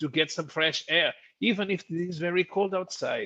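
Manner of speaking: comic Bavarian character voice. Retelling a comedian's German character Johannes: Johannes voice with Bavarian accent. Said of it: "speaks with a Bavarian accent".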